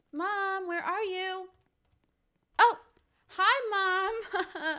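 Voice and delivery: sweet innocent voice. Putting a plan into action, calling out for mom in a sweet, innocent voice. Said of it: "Time to put on my sweet, innocent voice".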